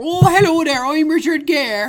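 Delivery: fake clumsy Irish accent. Mocking an actor's Irish accent from a remake: Richard Gere's bad Irish accent. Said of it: "an Irish accent".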